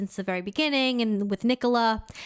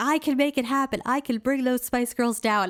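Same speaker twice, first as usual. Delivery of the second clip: mock half-hearted mild shouted yell; 3 semitones higher than usual. Retelling a movie scene where the editor yells: imitating someone yelling. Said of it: "the editor is, like, yelling".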